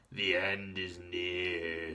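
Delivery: put-on very slow, low, hoarse, raspy old-woman voice. Narrator reads an old woman pointing at two strangers: raspy voice. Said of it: "she said in a raspy voice".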